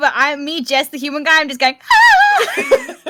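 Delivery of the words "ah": very high, loud, panicked scream. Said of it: "I'm panicking".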